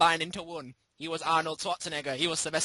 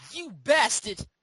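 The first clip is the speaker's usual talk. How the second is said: put-on, pitched-up New York Brooklyn accent; 7 semitones higher, 4 dB louder than usual. Teasing someone who got a cheap ROM of the game, in a Brooklyn accent. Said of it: "[name] with a Brooklyn accent".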